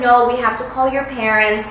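ordinary talk, nothing marked

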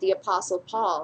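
plain

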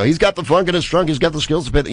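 play-by-play commentator voice. Comedian recalling making stuff up with another comedian, in a sports announcer voice. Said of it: "we were able to both do sports announcers and go".

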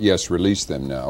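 usual speaking voice

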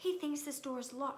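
hushed whisper. Harry, hiding from Filch behind a door, tells Neville: whispered. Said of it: "Harry whispered".

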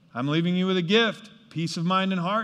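ordinary talk

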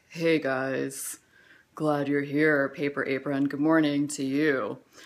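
deep, very low voice. Showing how they will greet viewers from now on: really low voice. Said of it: "really low".

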